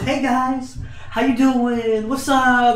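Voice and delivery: cheerful, high, bright, unhurried tone. Imitating how Sparty greets people: imitating Sparty's cheerful greeting. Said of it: "he's always so cheerful".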